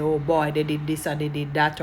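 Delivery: plain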